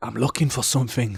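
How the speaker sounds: mock hushed whisper. Retelling what he whispered in the speaker's ear: retelling a whisper. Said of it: "he kind of whispers in my ear".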